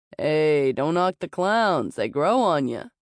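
plain reading voice

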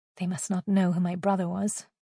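plain

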